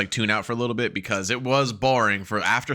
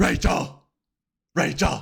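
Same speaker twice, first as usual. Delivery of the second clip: rough, creaky hero rasp from the throat; 4 semitones higher than usual. Mocking how an actor voiced the role, the speaker does Bale's Batman voice. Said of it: "he didn't sound like this".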